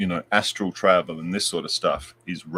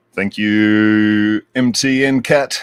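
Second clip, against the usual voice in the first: radio announcer voice, louder; 3 semitones higher, 10 dB louder than usual. Thanking someone by name, in a radio voice. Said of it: "That's my radio voice".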